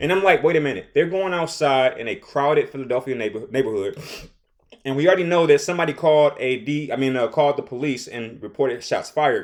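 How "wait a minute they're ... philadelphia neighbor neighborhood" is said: ordinary talk, nothing marked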